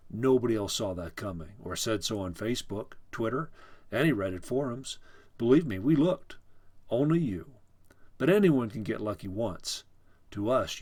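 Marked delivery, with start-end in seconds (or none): none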